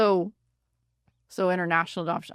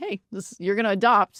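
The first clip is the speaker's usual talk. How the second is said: usual speaking voice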